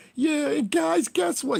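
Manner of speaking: whiny little voice. Mocking a grown man's complaint about his ankle: mocking whiny little voice. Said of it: "he talking that little bitch voice he got".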